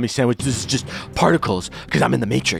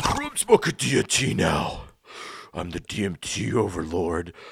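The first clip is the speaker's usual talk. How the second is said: deliberately lowered voice, lower and quieter; 6 semitones lower, 6 dB quieter than usual. Answering another speaker's question, joking: deliberately lowered voice. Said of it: "my voice is a little bit lower".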